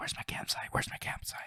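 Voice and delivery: barely audible, very quiet, breathy repeated whisper. Speaker acts out a lost woman crawling in the woods at night: mock-whispering lost woman. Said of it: "crawling around whispering".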